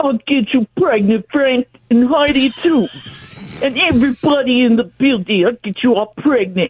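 dropped, deep put-on comedian voice. Calling in and doing an impression when asked: Tracy Morgan impression. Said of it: "[name] doing Tracy Morgan".

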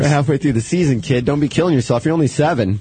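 ordinary talk

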